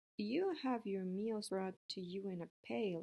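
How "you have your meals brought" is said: plain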